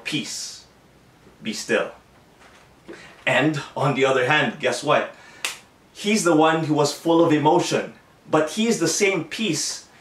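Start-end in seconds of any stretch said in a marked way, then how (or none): 0.0-1.9 very low, calm, cool, unshaken voice. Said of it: "he could go ahead and speak so cool".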